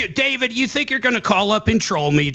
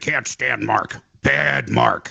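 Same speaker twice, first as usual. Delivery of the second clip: scornful, mocking, rough, creaky grumbling voice; 8 semitones lower than usual. Mocking a caller by pretending to be him: mocking imitation of David. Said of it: "I'm David".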